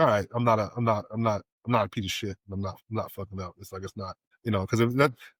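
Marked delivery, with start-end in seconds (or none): none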